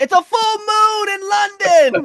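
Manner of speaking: very high, slow, drawn-out yell. Retelling what someone called out during a match: imitating someone yelling. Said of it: "And Bobby yells out".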